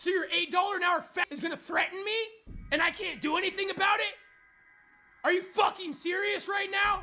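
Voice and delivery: livid, indignant, furious outburst. Speaker ranting about being threatened by someone and powerless to act, furious. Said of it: "I'm so fucking furious right now".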